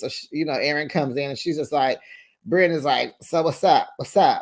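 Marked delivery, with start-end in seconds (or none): 3.2-4.4 play-acted sassy, snippy tone with attitude. Retelling how Brynn greeted Aaron from the couch: imitating someone with an attitude. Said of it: "sitting on the couch with an attitude".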